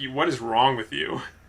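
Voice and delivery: plain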